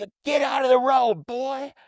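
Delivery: put-on loud, very high shout in Southern US accent. Retelling what a guy told him on the road, in a southern accent. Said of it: "In this southern accent".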